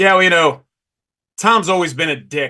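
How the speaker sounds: big, booming voice, pitched high. Retelling a remark about Tom Seaver, the speaker does Dave Parker's big booming voice. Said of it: "Dave Parker has big booming voice".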